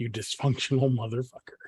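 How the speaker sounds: muttering under breath. Tabletop player in character responding to Haskar, muttering under breath. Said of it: "just muttering under my breath".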